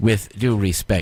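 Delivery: plain reading voice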